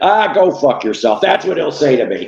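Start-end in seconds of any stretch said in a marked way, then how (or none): 0.0-1.2 gruff put-on celebrity voice. Acting out Danny Bonaduce refusing an autograph: Danny Bonaduce impression. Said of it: "I can't do a Danny Bonaducci impression".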